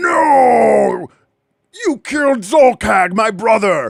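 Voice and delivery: high, slow ogre monster voice, no stretched out. Game master voicing an ogre whose brother was just killed: ogre voice. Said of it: "the other ogre goes".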